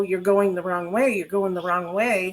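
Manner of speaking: ordinary talk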